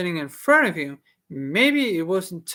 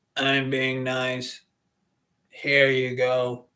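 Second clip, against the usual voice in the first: scratchy character voice, lower pitch; 5 semitones lower than usual. Reading a story aloud, voicing the character Jeff: scratchy voice. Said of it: "I have that scratchy voice because I'm trying to portray".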